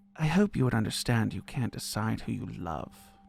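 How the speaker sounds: hushed, soft, discreet half-whisper. Voicing a character who half-whispers back discreetly: half-whispering in character. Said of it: "you hear her whisper back".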